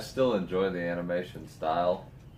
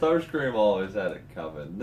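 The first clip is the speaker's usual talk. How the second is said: ordinary delivery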